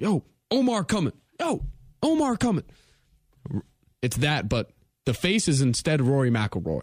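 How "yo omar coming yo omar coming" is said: put-on, very high, swooping sing-song shout. Describing a TV scene where everyone starts yelling: imitating people yelling. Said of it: "and everyone starts yelling".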